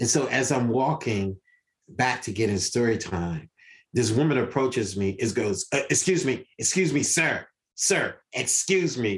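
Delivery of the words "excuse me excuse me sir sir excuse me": pushy New York attitude, calling out. Retelling how a woman approached at story time: imitating New York attitude. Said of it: "All this New York attitude".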